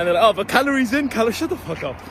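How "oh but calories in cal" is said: high, smug mocking voice. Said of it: "like, smug".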